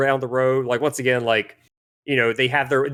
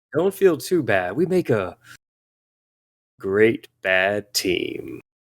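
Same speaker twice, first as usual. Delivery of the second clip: put-on childlike voice trying to sound evil; 4 semitones lower than usual. Voicing a trapped creature tempting the party: childlike voice trying to sound evil. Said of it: "You sound like an eight-year-old trying to sound evil".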